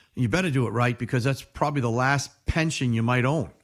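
plain

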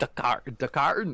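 put-on heavy Irish accent. Repeating the name in a joke put-on voice: super strong Irish accent. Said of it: "just a super strong Irish accent".

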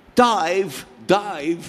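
put-on London Cockney accent, a touch high. Recalling how Hal's voice sounded while filming: Michael Caine Cockney accent. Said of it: "this is what the voice of Hal for us as we acted sounded like ... it was like working with Michael Caine".

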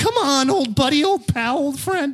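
very high cartoon character voice. Joking about Scooby-Doo with the others: Shaggy voice. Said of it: "Casey Kasem did the voice of Shaggy".

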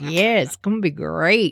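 put-on speech with laughter while talking. Retelling a father's reply from the other room, imitating someone laughing while talking. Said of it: "my dad in the other room kinda laughing like".

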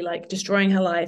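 ordinary delivery

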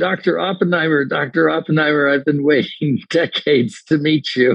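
put-on sudden call-out. Retelling calling out to the actor during a break: retelling a yell. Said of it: "I yelled out to him".

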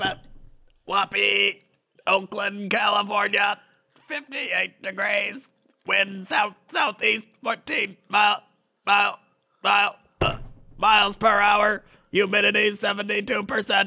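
high, level, monotone mechanical robot voice. Reading out the weather as a robot: Whoppy robot voice. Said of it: "You being a robot, flawless".

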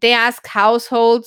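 ordinary delivery

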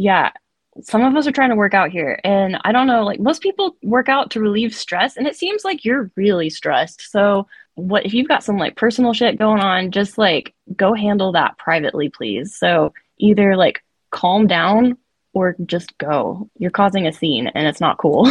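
ordinary delivery

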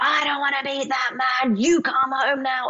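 put-on mild, high-pitched half-shouting. Retelling how the father screamed refusing to meet someone: imitating dad screaming. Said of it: "he's screaming at me".

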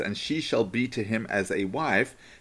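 ordinary delivery

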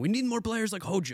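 put-on thick Greek accent. Imitating the speaker's Greek uncle reacting to a player pick: thick Greek accent. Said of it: "like in the thick Greek accent".

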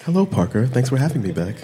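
put-on public radio voice, swooping. A returning guest greets the host Parker on a podcast, NPR voice. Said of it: "now we're using our NPR voices".

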